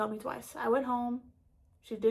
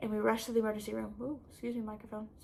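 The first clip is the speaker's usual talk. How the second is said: usual speaking voice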